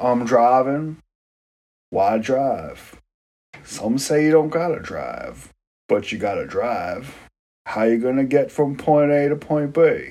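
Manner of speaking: soft, musing, murmured car-commercial voiceover. Speaker does his Matthew McConaughey in a car commercial impression. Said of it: "That's my Matthew McConaughey in a car commercial impression".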